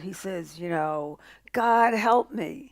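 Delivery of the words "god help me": desperate, pleading screaming. Telling a joke about a man hanging from a branch, retelling a scream for help. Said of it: "he screams out".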